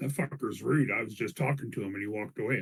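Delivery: quiet, hushed, confiding aside. Voicing a character leaning over to another character: said quietly. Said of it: "I just say it quietly".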